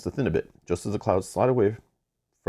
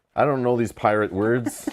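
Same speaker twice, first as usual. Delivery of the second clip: ordinary delivery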